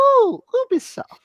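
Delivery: affectionate cooing. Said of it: "you just grab someone's cheek".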